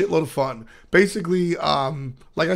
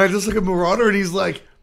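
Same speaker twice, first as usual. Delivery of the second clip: normal talking voice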